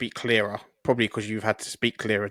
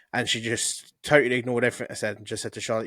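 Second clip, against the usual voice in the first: plain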